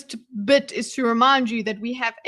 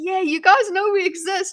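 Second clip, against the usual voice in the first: put-on excited cheer, pitched up, delighted; 7 semitones higher than usual. Speaker acting out their reaction to seeing South Africa in a movie, acting out an excited reaction. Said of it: "I get so excited".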